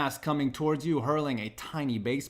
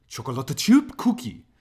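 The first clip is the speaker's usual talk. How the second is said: adopted Japanese accent; 4 dB louder than usual. Showing off another japanese pronunciation attempt, in a mock japanese pronunciation. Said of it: "I can also say chocolate chip cookie in Japanese too".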